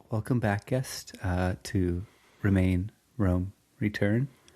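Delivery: mock ASMR-style voice. Opening the episode as host, joking: mock ASMR voice. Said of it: "A S M R version?".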